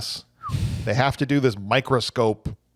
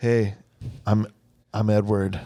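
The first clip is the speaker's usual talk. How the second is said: put-on brooding voice. Acting out a scene, head down looking up: brooding Edward voice. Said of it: "Real brooding here".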